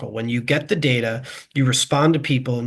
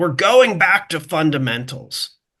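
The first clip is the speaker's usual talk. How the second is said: mock full-throated screaming at the top of the lungs; 4 semitones higher than usual. Retelling a movie scene where a character screams: imitating Danny Glover screaming. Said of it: "he screams".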